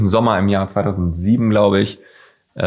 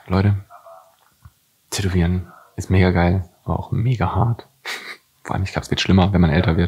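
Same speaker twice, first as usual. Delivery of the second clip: whispering. A vlogger talks to viewers while someone nearby is on the phone: whispering. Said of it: "Ich flüstere übrigens nur".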